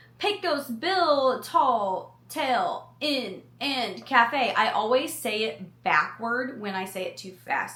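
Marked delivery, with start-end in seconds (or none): 0.2-4.5 slow, careful, deliberate enunciation. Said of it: "I was trying to make sure I didn't mess that up".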